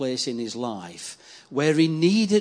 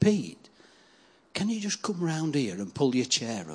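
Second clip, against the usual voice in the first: mock whisper, quieter; 2 semitones lower, 4 dB quieter than usual. Retelling a young fella's quiet early-morning request: imitating someone whispering. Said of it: "he just looked at me and he whispered".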